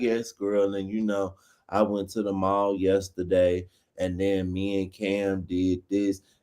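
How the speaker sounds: play-acted very low, dry, flat monotone drone. Acting out how some people talk without inflection, imitating a dry delivery. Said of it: "She just be so dry".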